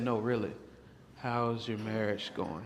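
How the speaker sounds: hushed, low delivery. Acting out asking about a marriage after shutting the door: lowered voice. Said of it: "my voice is gonna get lower".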